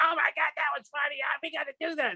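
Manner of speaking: squeaky, very high helium voice. Retelling Maynard's reaction to a scat: high helium-like voice imitating Maynard. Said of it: "sounds like he inhaled helium".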